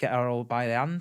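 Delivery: ordinary talk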